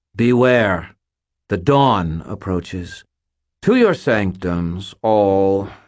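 tone full of scorn and contempt. She addresses the children in the chamber, full of contempt. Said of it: "her tone full of contempt".

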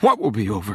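ordinary delivery

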